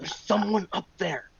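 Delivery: soft, hushed mutter under the breath. Warning the party in character about someone above: under the breath. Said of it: "under my breath".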